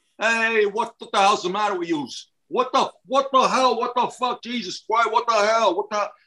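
put-on mixed Brooklyn accent. Describing someone's accent as a mix of the listener's and Brooklyn: Brooklyn-mix accent. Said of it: "sort of like this".

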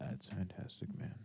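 half-whispered, uninterested. Responding to another speaker, sounding like he doesn't care. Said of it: "Connor legitimately sounds like he doesn't care".

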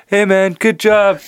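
high hollered call-out. Retelling a line from a trailer: imitating someone yelling. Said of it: "yelling at Tommy".

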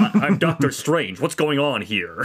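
put-on American accent. Showing how he plays the doctor, doing Doctor Strange's American accent. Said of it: "he just has like an American accent".

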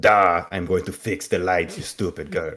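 put-on accent of Transylvania. Retelling a story, the speaker quotes a man in a Transylvanian accent. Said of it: "that's a very good Transylvanian accent".

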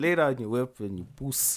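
South African way of speaking. Speaker shows how a south african would really say it: south african accent. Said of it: "If you really wanted to speak like South African".

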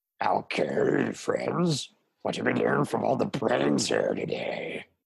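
creaky, rough zombie-like voice. Asked to say it as a zombie would, addressing friends: zombie voice. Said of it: "but you do it as a zombie would?".

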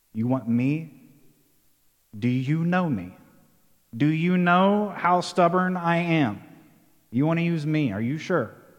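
ordinary talk

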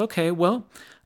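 high, very polite voice. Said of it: "she was very polite".

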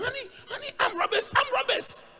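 mock very high, frantic, panicked screaming. Retelling how the wife reacted to gunshots: imitating wife screaming. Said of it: "Started screaming".

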